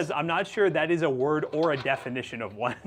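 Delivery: ordinary talk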